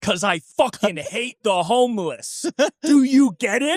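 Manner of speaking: really aggressive scream, very high-pitched. Retelling how Kurt looked at the woman: imitating a scream. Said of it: "looked directly at her and screamed".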